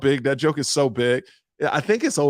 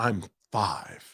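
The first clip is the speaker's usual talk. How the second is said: mock smug, snooty, superior tone; 3 semitones lower, 7 dB quieter than usual. Retelling a lady's reply in the boarding line: imitating a lady with attitude. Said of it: "Don't give me this attitude".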